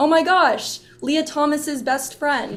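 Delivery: high, slow, drawn-out sarcastic tone. Retell what he said when asked if he remembered her, imitating someone's sarcastic tone. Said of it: "obviously in a sarcastic tone".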